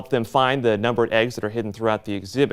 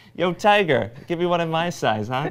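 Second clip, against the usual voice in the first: put-on little girl voice with a Brooklyn accent; 4 semitones higher, 3 dB quieter than usual. Voicing an unimpressed little girl in a picture, brooklyn little girl accent. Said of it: "That accent too".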